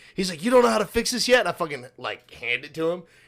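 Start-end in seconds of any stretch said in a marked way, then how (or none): 0.5-1.4 very loud, very high, berating yell. Retelling how the supervisor came over while a robot was fixed: imitating a yelling supervisor. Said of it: "Then why are you yelling at me?".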